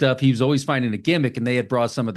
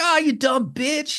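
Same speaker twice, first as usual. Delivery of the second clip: mock very high, stretched-out, drawn-out screaming; 14 semitones higher than usual. Retelling a film character's insult to a girl: imitating a character screaming. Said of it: "He's always screaming at her".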